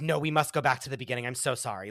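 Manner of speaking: mock-rattled, flustered woman's voice. Retelling what a rattled woman said after the piano player went off, imitating a rattled woman. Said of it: "she was so rattled from the from the thing".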